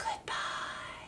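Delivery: barely-there, very soft whisper. Leading a goodbye rhyme, speaker says goodbye as quietly as they can. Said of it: "as quietly as we can".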